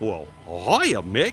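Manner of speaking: cartoon dog character voice. Showing the closest attempt yet at a voice for Goofy, Goofy voice attempt. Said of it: "The closest that I've gotten is".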